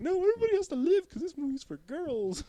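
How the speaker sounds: high, loud, mocking girly voice.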